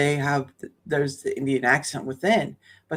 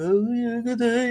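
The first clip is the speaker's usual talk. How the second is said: slow English in a put-on Indian accent; 8 semitones higher than usual. Describing how English sounds from Indian migrants: imitating English with Indian accent. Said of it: "there's a mixture of their Indian accent".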